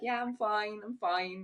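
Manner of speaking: high, slow, obviously put-on pretend voice. Retelling a Friends episode where Ross is totally not fine: imitating Ross from Friends faking fine. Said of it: "he is going around like".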